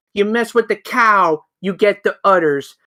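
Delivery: ordinary delivery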